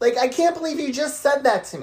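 very high, furious, angry yelling. Saying what you feel inside about a hurtful remark, shouting angrily. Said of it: "You are shouting".

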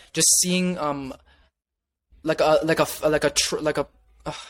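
stuttering with broken-off restarts and false starts. Answering how they want people to see them, stuttering. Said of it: "I'm just, like, stuttering right now".

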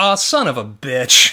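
slow, loud, drawn-out, deflated, utterly disappointed resignation. Recalling a favorite commentary delivery, imitate Jim Ross in the most disappointed voice. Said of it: "says in the most disappointed voice".

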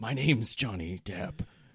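put-on loud, tipsy drunk man voice. Playing a drunk stranger claiming to be famous: drunk man voice. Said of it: "This strange drunk man took off his sunglasses".

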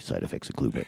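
deep, hushed radio announcer voice.

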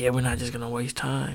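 plain

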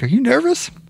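timid, shy, very high-pitched voice. Retelling how a friend asked in the car: imitating a shy, quiet question. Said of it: "he kinda shyly, quietly, he's like".

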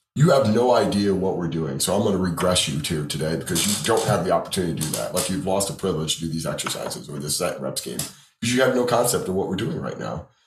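normal talking voice

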